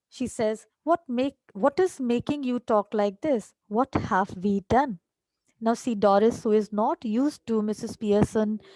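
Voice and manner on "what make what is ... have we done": normal talking voice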